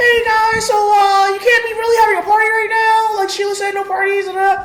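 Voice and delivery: very high, squeaky cartoon mouse voice. Retelling a guy who came to the door during the party, in Mickey Mouse voice. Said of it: "he had a Mickey Mouse voice".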